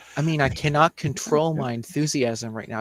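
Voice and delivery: normal talking voice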